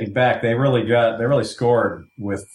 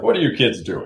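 authoritative, commanding, in-charge boss voice. Retelling how a man spoke when he seemed in charge: his boss voice. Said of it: "he was using his boss voice".

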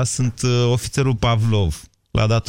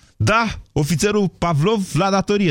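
mock-annoyed, irritated, pitched-up voice; 8 semitones higher than usual. Telling a joke, the speaker voices the officer picking up the phone again, mock-irritated. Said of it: "deja nervos".

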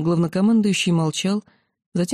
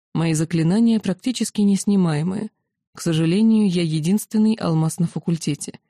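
ordinary delivery

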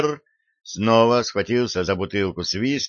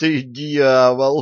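words moaned and groaned out; 3 semitones higher than usual. [name] answers the other speaker's plan, groaning. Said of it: "простонал Питер".

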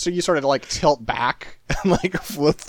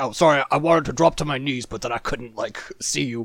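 cartoon mole character voice. A narrator voices a mole who drops behind a counter and stands up again, mole character voice. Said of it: "He's like".

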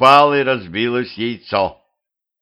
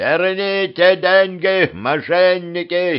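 shouting, pitched high; 7 semitones higher than usual. A big-nosed man in the crowd yells after the fleeing Petrovich, shouting. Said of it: "закричал носатый".

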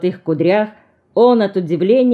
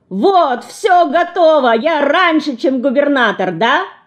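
high, triumphant, victorious shout; 8 semitones higher than usual. Racing to dress before the governor, a younger brother shouts triumphantly. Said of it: "кричит с торжеством".

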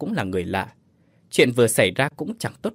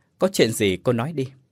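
usual speaking voice

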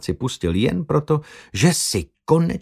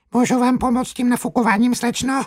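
high, squeaky helium voice; 13 semitones higher than usual. Having inhaled balloon helium to amuse a young woman, a man speaks in a squeaky helium voice. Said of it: "aby ji pobavil pisklavým hlasem".

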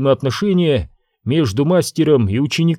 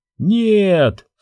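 high, drawn-out, stretched cry; 6 semitones higher than usual. Narrator reads Obi-Wan as the queen lifts a cup to her lips: cried out. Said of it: "вскричал Оби-Ван".

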